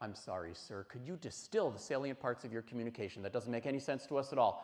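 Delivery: cutting, snide, snarky, snippy tone. Retelling what the mother said to school officials: imitating a snarky, snippy retort. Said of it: "my mom said something snarky and snippy".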